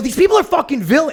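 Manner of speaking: exaggerated angry rant. Recalling getting scammed on a dinner, the speaker acts out a mock-angry rant. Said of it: "Like you'd act really mad".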